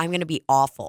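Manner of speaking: ordinary talk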